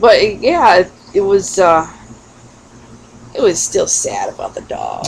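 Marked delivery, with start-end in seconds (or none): none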